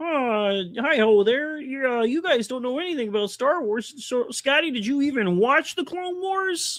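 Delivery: high cartoon puppet frog character voice. Asked to give the chat something, answering in Kermit the Frog voice. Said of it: "Do it in Kermit voice".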